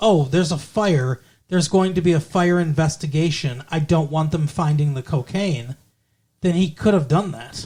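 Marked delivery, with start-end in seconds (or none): none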